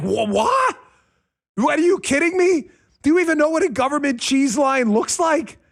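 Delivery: put-on high, incredulous old man voice. Acting out a great-grandparent who grew up in the Great Depression: imitating a great-grandparent. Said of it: "the great-grandparent who grew up in the Great Depression is like".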